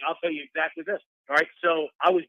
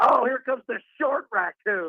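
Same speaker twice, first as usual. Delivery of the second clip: play-acted sloppy drunken yell, high pitched; 7 semitones higher than usual. Retelling walking down a stadium tunnel past a Chargers fan, imitating a drunk fan's yell. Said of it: "a Chargers fan is drunk, and he yells".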